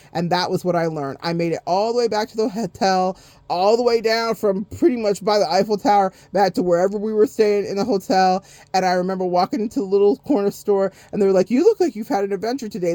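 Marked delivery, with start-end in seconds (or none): 11.5-13.0 broken, non-native English speech. Retelling what a worker at a corner store said: imitating broken english. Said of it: "in his broken English".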